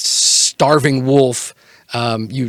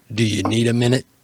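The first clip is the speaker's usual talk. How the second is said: sarcastic, snarky talking-wolf voice. Voicing the other head of a two-headed wolf: sarcastic wolf voice. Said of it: "Sarcastic wolf".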